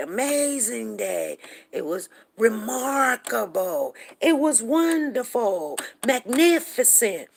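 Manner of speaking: very slow, swooping, drawn-out, booming, enthusiastic roar. Retelling how people described an amazing day, retelling loud, roaring praise. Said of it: "their voice would roar out. It, it would just, it would get so loud".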